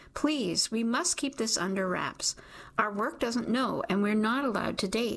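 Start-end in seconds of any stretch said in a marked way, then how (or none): none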